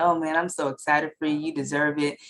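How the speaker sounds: ordinary talk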